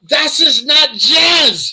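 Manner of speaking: put-on shrill, stretched-out scream in broken German accent. Retelling how a woman smacked him with her cane while he was mixing, mock-screaming in broken german accent. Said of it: "screams out in a broken German accent".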